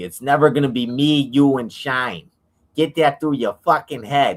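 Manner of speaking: loud, high-pitched, badly done Boston accent. Retelling a fight involving Jon Hamm, quoting him in a bad Boston accent. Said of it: "Worst Boston accent I've ever heard".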